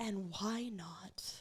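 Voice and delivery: slow, soft, compassionate whisper.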